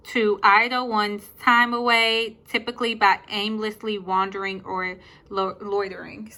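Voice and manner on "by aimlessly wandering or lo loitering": ordinary talk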